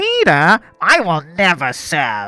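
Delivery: loud, very slow, drawn-out swooping declaration. Acting out a silly scene, a character voice sounding like Lois Griffin. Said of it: "That's Sylvanas' voice, by the way".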